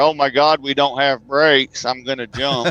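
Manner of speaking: ordinary talk, nothing marked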